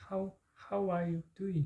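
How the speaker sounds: very slow how are you doing, every word drawn out.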